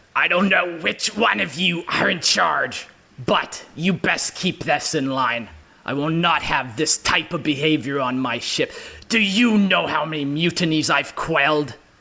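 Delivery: riled-up, agitated ship captain voice. Voicing a ship captain scolding the crew: agitated captain voice. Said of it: "He's very agitated at this point".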